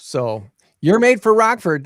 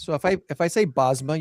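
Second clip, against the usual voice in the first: plain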